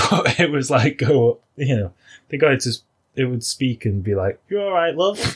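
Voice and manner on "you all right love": put-on bright high-pitched Yorkshire accent. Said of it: "had a Yorkshire accent".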